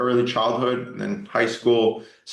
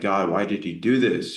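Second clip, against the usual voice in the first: acted-out angry, pleading tone; 2 semitones lower than usual. Recalling an injury that meant a year out, acting out anger at god. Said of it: "I was like angry with God".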